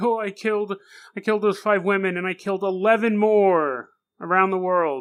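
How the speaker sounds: play-acted tearful babbling sobs, blubbering like a baby. Retelling an arrested suspect's confession: imitating crying like a baby. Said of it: "He just starts crying like a baby".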